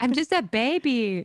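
put-on very high, slow, stretched-out baby screech. Retelling a viral clip of a mom and her baby: imitating a screaming baby. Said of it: "the baby's just screaming".

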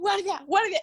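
shout, high-pitched but contained. Recounting how the listener started shouting for a guard, retelling a shout. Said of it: "tú partiste a gritar".

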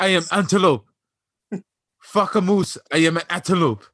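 loud, high-pitched put-on Nigerian accent. Friends joke about someone who starts talking with an accent; speaker quotes him: put-on accent. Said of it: "He's going to start talking with an accent".

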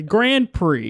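put-on southern accent on "Grand Prix". Mocking the other speaker's way of saying Grand Prix: imitating a southern pronunciation. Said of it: "a southern".

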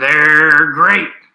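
loud, booming, pirate-like cartoon voice. Picking a team for a bowl game, the speaker quotes Tony the Tiger: failed impression. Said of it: "I just sounded like a pirate".

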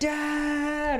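put-on high, loud screaming in a child's voice.

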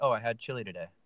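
put-on breezy, throwaway, super nonchalant casual tone. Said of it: "just like he's telling us".

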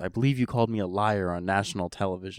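ordinary talk, nothing marked

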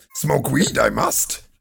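slow, creaky, drawn-out voice. Joking about smoking weed in a Yoda voice. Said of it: "It kind of sounds like Yoda".

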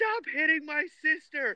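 put-on very high, loud shrieking scream. Retelling a scene in Barnes & Noble, imitating Fee screaming. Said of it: "started screaming".

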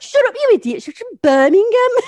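very high, very loud, agitated, antsy yell. Retelling a friend in the crowd while the speaker was being booed, mock-agitated. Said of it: "getting all like antsy and like".

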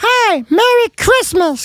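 very high-pitched, tiny, little gingerbread-man voice. Voicing the waving gingerbread man on the front: gingerbread man voice. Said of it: "that's what he sounds like".

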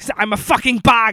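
bad put-on Dutch accent. Answering how a film director sounds: Paul Verhoeven impression. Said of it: "How does he sound again?".

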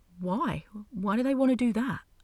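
confused. Narrator voicing Lissy questioning Aphrodite: confused. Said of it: "Lissy's face scrunched up in confusion".

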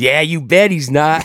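put-on, worked-up, high, eager, gleeful excitement. Retelling a man's reaction in a story, mock-excited. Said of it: "the pistol got all excited".

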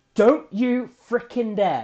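raw, high, loud gut-reaction yell. Retelling a reaction to a tv scene, the speaker re-enacts their own shouting at the tv. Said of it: "I start shouting at the TV".

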